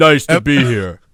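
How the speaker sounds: very slow, deliberate, word by word. Interviewing a guest on a podcast, answering as him: Randy Orton impression. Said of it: "how's that impression?".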